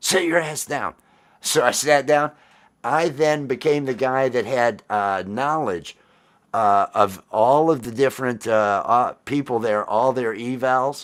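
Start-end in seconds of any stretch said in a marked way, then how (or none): 0.0-0.9 acted, bossy, mild half-yell. Retelling the senior chief's order to sit down: imitating someone yelling. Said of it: "He screams".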